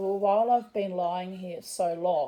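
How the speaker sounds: usual speaking voice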